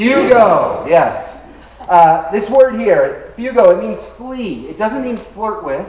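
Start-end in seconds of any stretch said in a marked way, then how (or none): 0.0-0.9 high, loud, said with gusto. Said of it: "Now say it with gusto".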